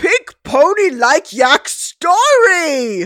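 high, loud put-on yak voice, last word stretched. A character tells a story about yaks in a yak voice. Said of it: "Pinkie Pie doing a yak voice".

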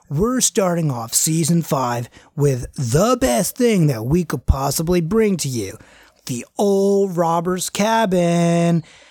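rowdy, gross surfer-dude voice. In an actual-play game, the player voices the ghost show's host opening season 5: [name]'s gross surfer-dude voice. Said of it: "Like, I kind of like the gross surfer dude kind of guy. / There is two gentlemen who are a little rowdy, / Like, I kind of like the gross surfer dude kind of guy. / "Okay, whatever you say, man. Like".

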